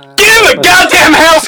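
loud, furious shout.

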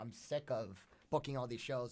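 ordinary talk, nothing marked

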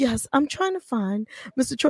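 soft, smooth, silky charmer's voice. Retelling calling a talent agency to find someone, in a silky smooth voice. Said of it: "In that voice? ... the silky smooth voice".

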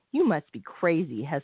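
sharp, cutting, reproving tone. Narrator voicing a woman's reply to the motherly girl, sharply. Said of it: "hester said sharply".

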